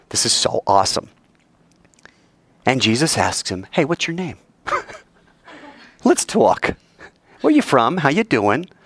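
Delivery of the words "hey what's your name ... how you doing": casual, friendly, breezy, joking, swooping pitch. Joking that Jesus chats casually with the demon: mock casual chat. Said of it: "I'm kidding".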